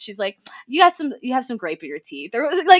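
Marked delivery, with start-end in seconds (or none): 0.7-2.3 mock catty, snide mean-girl tone. Retelling a mean-girl character's line from the movie: imitating Drea's snide remark. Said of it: "snide little remarks".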